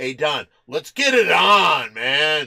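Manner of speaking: very loud, nasty, mean voice, drawn out and jeering. Retelling sitting in a coffee shop, imitating Tombstone's mock-mean voice. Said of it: "in a very mean voice".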